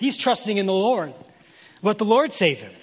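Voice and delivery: mocking, sarcastic sing-song jeering taunt. Explaining verses and restating a quoted taunt; mock-sarcastic retelling. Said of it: "Kind of sarcastic in that tone there".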